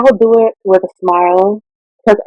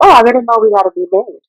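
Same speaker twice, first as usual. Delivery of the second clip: mock-sarcastic, imitated sarcastic tone, faster; 3 semitones higher than usual. Recounting a man's comment as she threw away her food: retelling a sarcastic remark. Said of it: "has said a very sarcastic comment".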